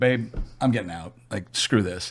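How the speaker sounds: put-on angry, fed-up, pissed-off tone. Retelling telling his wife he is quitting: retelling own angry words. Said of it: "So I was pissed".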